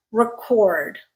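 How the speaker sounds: record stressed on second syllable. Speaker demonstrating word stress says record stressed on the second syllable. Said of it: "Did you hear the difference?".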